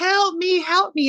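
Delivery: high, loud screaming.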